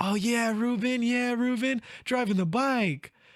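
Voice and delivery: high, loud, excited cheering voice.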